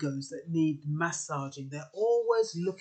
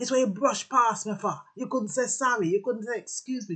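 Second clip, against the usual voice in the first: put-on Jamaican accent; 5 semitones higher than usual. Acting out how some people react when someone brushes past them, jamaican accent. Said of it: "I put on the Jamaican accent sometimes".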